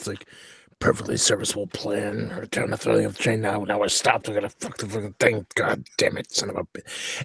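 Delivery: grumbling under breath. Playing your character as the train plan goes wrong: grumbling under breath. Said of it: "I'm kind of grumbling under my breath".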